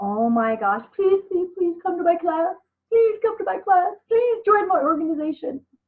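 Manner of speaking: high, desperate, pleading begging tone. Pointing to a guy shown down below, the speaker does mock begging. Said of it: "we should not have to beg anyone".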